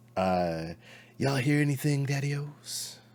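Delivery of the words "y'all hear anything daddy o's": higher-pitched hepcat jive voice. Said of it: "Why are you talking like that?".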